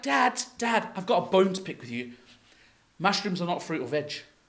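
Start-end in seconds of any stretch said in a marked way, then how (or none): none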